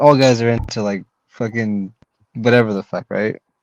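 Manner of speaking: usual speaking voice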